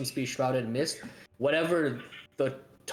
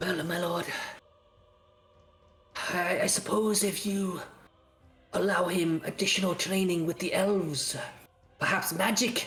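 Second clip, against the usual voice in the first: soft character whisper, higher and slower; 4 semitones higher than usual. Asked by his lord whether the boy is improving, Rahadin answers in a soft whisper. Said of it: "Rahadin's like softer whisper goes".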